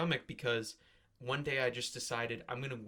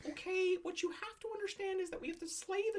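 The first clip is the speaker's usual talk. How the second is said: put-on very high-pitched, boyish young voice. Talking about the author's new book, break into a prepubescent Jordan Peterson impression. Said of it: "You sound like prepubescent Jordan Peterson".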